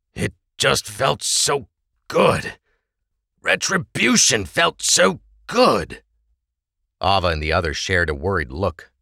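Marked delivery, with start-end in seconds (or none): 0.2-6.1 distant, half-awake, very high and slow. A man apologizes to his companions, then explains himself, in a distant voice. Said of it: "speaking with a distant voice".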